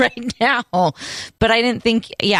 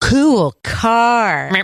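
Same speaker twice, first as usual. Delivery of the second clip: overdone, heavily mouthed delivery, car drawn out; 4 semitones higher, 4 dB louder than usual. Acting out saying it to them so they can read your lips, really exaggerated. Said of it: "I say it really exaggerated".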